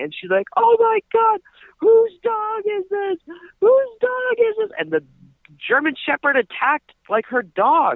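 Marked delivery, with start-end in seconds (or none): 0.6-4.7 mock shrill screeching shout, very high. Retelling how a woman woke everyone over a loose dog: imitating a woman yelling. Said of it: "yelling and screaming".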